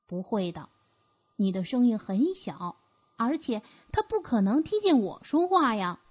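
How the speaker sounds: ordinary delivery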